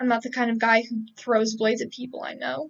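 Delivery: ordinary delivery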